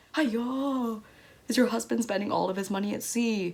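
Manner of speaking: mocking, teasing call with drawn-out "hi-yo". Retelling how silly people mocked the family: imitating mocking people. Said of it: "silly people trying to mock us".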